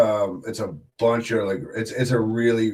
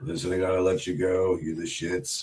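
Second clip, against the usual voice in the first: lower, softer promoter-style voice. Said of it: "as Tommy Dreamer".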